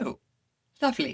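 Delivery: put-on British accent. Retelling what a teacher said after a mistake, imitating a British accent. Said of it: "with his British accent".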